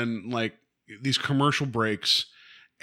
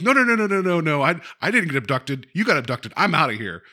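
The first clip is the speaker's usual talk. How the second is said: mock-yelling, slower pace; 4 semitones higher, 4 dB louder than usual. Describing Ellen running out of the room, retelling Ellen's yell. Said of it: "books it out of the room yelling like".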